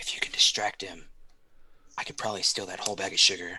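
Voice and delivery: hushed whisper close to the ear. Whispering in character to Kat about a plan to steal sugar: whispering in character. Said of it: "I'm gonna whisper in her ear".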